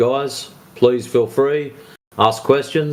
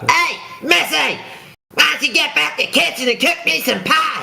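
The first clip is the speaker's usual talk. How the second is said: put-on very high, rough, bratty kid voice. Trying out South Park impressions for the other person, doing an Eric Cartman impression. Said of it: "Eric Cartman off South Park".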